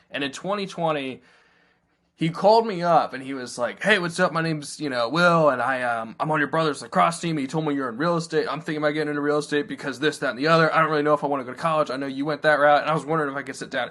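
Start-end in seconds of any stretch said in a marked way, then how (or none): 3.9-13.9 fast, run-together, rattled-off rapid-fire delivery. Speaker retells a former intern's first phone call, imitating someone talking fast. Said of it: "He literally was saying it so fast".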